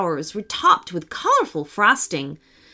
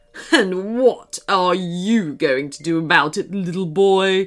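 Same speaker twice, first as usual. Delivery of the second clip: low, menacing, sneering dragon voice; 5 semitones lower than usual. Reading a story, the dragon taunts a boy defending an elf, sneering. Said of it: "was the evil chocolate dragon. / beamed the dragon, / said the dragon menacingly".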